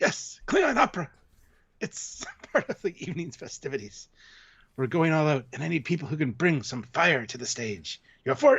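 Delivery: totally serious, played straight, pitched slightly up. Retelling the actor's reply, imitating Christopher Lloyd, totally serious. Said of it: "totally serious".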